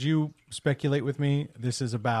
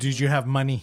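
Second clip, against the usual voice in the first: put-on Mexican accent; 4 dB louder than usual. Retelling what a man kept saying, imitating his Mexican accent. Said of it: "And he was like".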